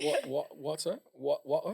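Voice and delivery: mock British water with a rising pitch.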